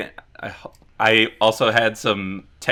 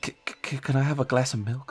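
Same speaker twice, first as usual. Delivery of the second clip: put-on half-whispered, stuttering little-kid voice; 3 semitones higher, 7 dB quieter than usual. Retelling how the birthday guy leaned over to order: imitating a half-whisper.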